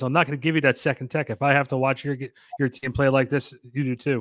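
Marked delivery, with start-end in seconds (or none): none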